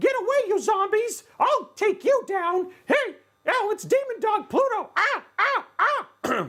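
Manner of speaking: very high pitch, slow pace. Joking about using a PC part as a weapon against zombies: Mickey Mouse voice. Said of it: "you could even do it as Mickey Mouse".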